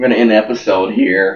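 loud voice that cracks and breaks mid-line. Streamer wrapping up a game episode, voice cracking. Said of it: "Voice crack".

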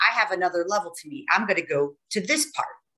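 ordinary delivery

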